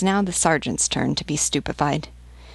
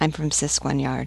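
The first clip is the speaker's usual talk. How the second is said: plain reading voice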